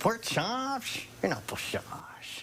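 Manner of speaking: clumsy, awkward, very high put-on voice. Showing the old clumsy impression, head tilted: Humphrey Bogart impression. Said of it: "doing an impersonation of our associate producer's impersonation of Humphrey Bogart".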